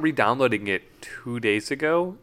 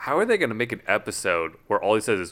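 usual speaking voice

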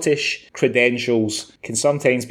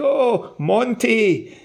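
very high, squeaky, bad put-on Scottish accent; 11 semitones higher than usual. Retelling how a TikTok video review starts: Gordon Ramsay's bad Scottish accent.

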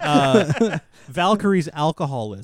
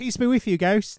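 put-on New Zealand accent, pitched up, drifting British; 7 semitones higher than usual. Quoting a favorite movie line in a put-on New Zealand accent. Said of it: "I thought I was doing New Zealand".

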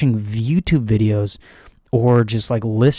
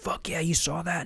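put-on yell, higher pitch; 6 semitones higher, 13 dB quieter than usual. Retelling a lifter racking the weight after a squat: imitating a scream. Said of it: "two plates and screams".

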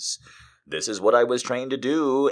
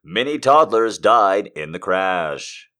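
loud, put-on broadcast announcer voice; 5 dB louder than usual. Showing you can say anything in that voice: put-on announcer voice. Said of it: "you can say anything in that voice".

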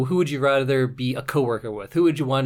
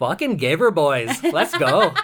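put-on drawn-out, sing-song Canadian accent; 4 semitones higher, 4 dB louder than usual. Talking about playing hockey, the speaker shows their Canadian hockey accent. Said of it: "my Canadian accent comes out when I play hockey".

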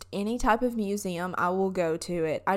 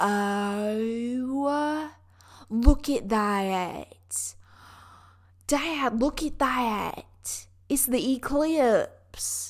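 very slow, heavy, thick southern drawl; 3 semitones higher than usual. Retelling her own words to her dad in a video about the eclipse, thick southern accent. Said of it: "my southern accent comes out really bad".

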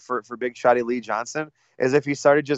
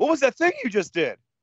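very high, squeaky, baffled, bewildered voice; 12 semitones higher than usual. Imitating a wrestler baffled by an opponent's block: imitating Malachi. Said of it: "Malachi being like".

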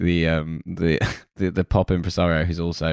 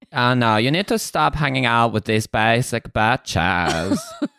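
put-on German-ish accent with vocal fry, higher; 5 semitones higher than usual. Imitating how she talks in the series, Anna Delvey impression. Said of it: "Is that supposed to be Anna Delvey?".

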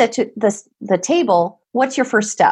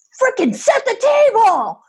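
very high, swooping yell; 12 semitones higher than usual. Describing families of teens, the speaker imitates a mom yelling at her child. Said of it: "you don't have to yell at me".

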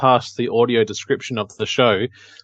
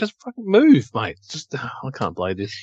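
mock-angry outburst. Picturing the listener playing the game, acting out them imitating someone getting angry. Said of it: "I can just see you getting really angry".

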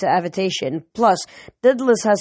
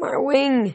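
groaning, high, pained moan; 6 semitones higher than usual. Narrator reads a spiraling pegasus answering the narrator's yell; moaning. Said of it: "he moaned".

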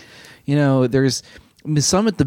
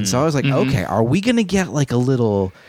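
ordinary talk

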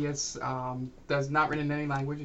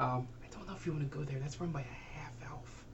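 whisper, much quieter; 11 dB quieter than usual. A local leans in while giving directions to the closest inn, whispering. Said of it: "so she's absolutely telling the truth. / It leans in and whispers".

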